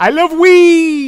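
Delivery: very high, very loud shrill gamer yell, "weed" drawn out. Speaker retelling what an online multiplayer teammate said, imitating teammate on bad Xbox mic. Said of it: "the worst Xbox three sixty mic you've ever heard just says".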